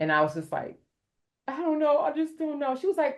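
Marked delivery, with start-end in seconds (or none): 1.5-2.8 acted-out, very high-pitched, tearful sobbing. Retelling a phone call to her mom: imitating her own crying. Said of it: "I started crying again immediately".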